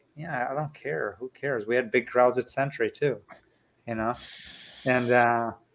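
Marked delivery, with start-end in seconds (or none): 0.2-1.7 mock muttering under breath, quieter. Retelling own past reaction to talk about the fans: imitating muttering under breath. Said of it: "And under my breath".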